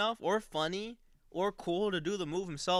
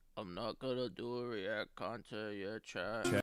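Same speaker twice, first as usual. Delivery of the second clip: very low, boring, flat monotone; 9 semitones lower, 8 dB quieter than usual. Speaking to chat on stream, in a monotone voice. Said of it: "Monotone voice".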